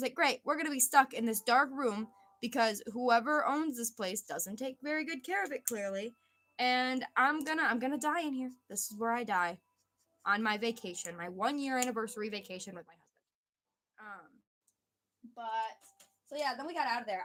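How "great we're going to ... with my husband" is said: normal talking voice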